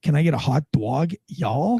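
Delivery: put-on mixed Florida and Yankee accent. Describing a Yankee accent crossbred with Florida, do a Florida-Yankee hybrid accent. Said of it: "you'll hear something that sounds like this".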